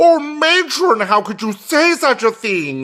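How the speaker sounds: mock-incredulous, fast, animated delivery. Recalling a 1962 Globe Theatre performance, mock-incredulous, fast and animated. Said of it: "he gets very fast and animated, and then incredulity in his voice".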